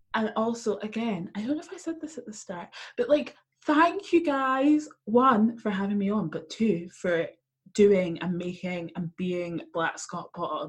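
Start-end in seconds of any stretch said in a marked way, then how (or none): 3.7-10.7 slow speech with the voice breaking. Thanking the hosts at the end of a podcast appearance, voice cracking. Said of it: "my voice just cracked".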